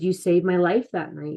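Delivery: plain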